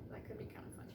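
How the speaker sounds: soft, hushed, almost whispered voice. Speaker suggesting an idea for the listener's characters, softly.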